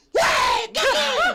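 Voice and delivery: high, loud shouted call.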